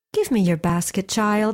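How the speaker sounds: plain reading voice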